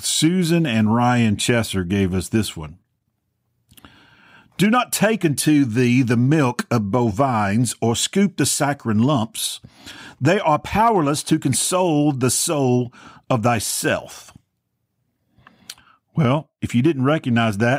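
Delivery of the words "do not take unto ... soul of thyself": put-on British-accented delivery. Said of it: "with a British accent".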